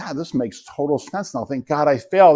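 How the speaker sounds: ordinary talk, nothing marked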